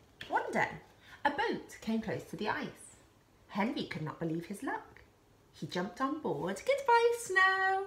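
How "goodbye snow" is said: delighted laughing, very high pitch. Reading a story, the narrator voices a character leaving on a boat, laughing. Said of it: "Henry laughed".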